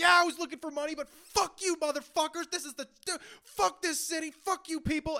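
put-on, very high-pitched hollering yell. Speaker acts out a man coming through and retelling a yell at strangers. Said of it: "He's just yelling at strangers now".

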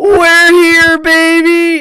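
put-on very high, very loud shrill scream, "baby" drawn out. Asked to do it better, quoting the movie scene: imitating Stifler screaming. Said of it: "you do better than that".

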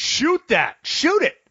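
high put-on screaming. Retelling watching a game at home: imitating screaming at the tv. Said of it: "screaming at the T V".

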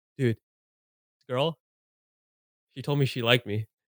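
stressed, freaked-out, panicked voice. Retelling a phone call from Noah, imitating Noah panicking. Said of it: "He's panicking".

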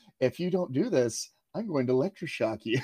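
mock-sweet voice. Retelling a threat from One Flew Over the Cuckoo's Nest, mock-sweet voice. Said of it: "in a very sweet voice".

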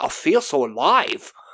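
terrible put-on Australian accent, slow. Recapping a scene where a character suddenly speaks, in a terrible fake Australian accent. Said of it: "My Aussie accent is terrible".

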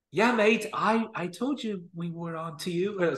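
bad, slow, butchered British lad accent. Imagining what Jack Duffin says behind a man's back, in a bad British accent. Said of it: "sorry for totally butchering the British accent".

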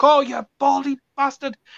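frustrated, very high-pitched, drawn-out screaming yell. Retelling screaming at the tv: imitating own screaming. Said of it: "I was screaming at the T V".

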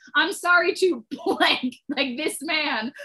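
speech interrupted by laughing. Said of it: "I can't say it without laughing".

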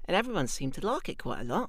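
light, slight Australian accent. Telling how they spoke for the casting, in a light Australian accent. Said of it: "So I was talking a bit like this".

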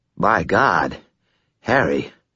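put-on thick, slurred voice, as if nose held. Butters speaks to Harry as Harry begins to sit up: thick, slurred voice. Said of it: "His voice was thick and slurred, as if he were holding his nose".

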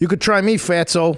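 put-on Chicago accent. Asked to say a movie line with a chicago accent. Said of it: "with your Chicago accent".

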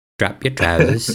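put-on elderly British gentleman voice. Retelling a hernia check, speaker quotes the examiner in an old British man impression. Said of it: "it was like an old British man".

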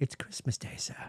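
put-on hushed, breathy, soft little-boy voice. Talking about spending the holidays in Hong Kong: Tiny Tim voice. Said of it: "I'm going to do my best Tiny Tim".

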